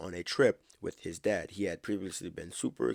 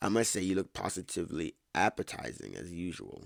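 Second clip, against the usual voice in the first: usual speaking voice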